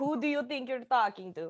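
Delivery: clumsy, bad, fake put-on Russian accent. A podcast host acts out someone behind a counter, in a bad russian accent. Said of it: "what a Russian".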